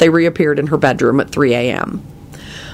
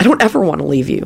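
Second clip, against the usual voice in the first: ordinary delivery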